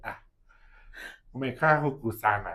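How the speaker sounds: put-on loud, drawn-out grandmother voice. Retelling what a child said in Swahili: imitating a child sounding like an old shosho. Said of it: "sounded like what, like, an old, like, shosho would say".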